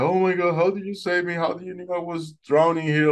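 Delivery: high, tearful crying out in disbelief. Retelling being saved by a dolphin, acting out crying to it. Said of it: "I'm just crying, like".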